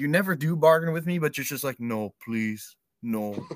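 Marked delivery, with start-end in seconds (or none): 1.8-3.5 play-acted small, desperate, pleading voice. Teasing a friend about how they react to scary talk, imitating someone pleading. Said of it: "the way you say it".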